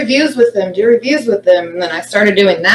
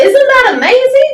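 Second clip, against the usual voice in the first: enthusiastic, excited, higher pitch; 3 dB louder than usual. Showing how to say the line to clients: excited. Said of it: "You have to be excited".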